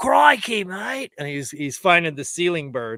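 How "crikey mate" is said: put-on Aussie accent, pitched very high. Telling someone about an AI video with Steve Irwin, do a Steve Irwin impression. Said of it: "There was one with Steve Irwin".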